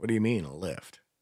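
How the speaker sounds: plain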